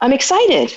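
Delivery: sincere, genuine excitement. Showing how tone of voice changes meaning: sincerely excited. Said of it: "So if I say to you".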